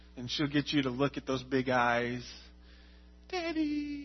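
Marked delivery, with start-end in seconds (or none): 3.3-4.1 put-on sweet, elegant, high, soft toddler voice. Describing how Charlie asks for ice cream, imitating Charlie's sweet high voice. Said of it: "And it's real high pitch".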